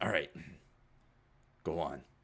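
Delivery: sober, no-nonsense, serious and grave tone. Voicing an uncle answering a phone call: quiet and serious. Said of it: "kinda quiet and serious".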